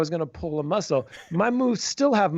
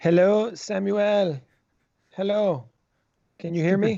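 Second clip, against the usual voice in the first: mock, put-on Latin American Spanish accent; 2 semitones higher than usual.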